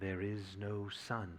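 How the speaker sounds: very quiet, very slow, deepened, hushed voice. Narrating the witch repeating herself to the four, in a softer, deeper voice. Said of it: "She repeated in a softer and deeper voice".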